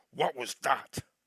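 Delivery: very angry, heated, full of rage. Having pinned a man against a tree, speaking to him in a very angry tone. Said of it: "like in a very angry tone".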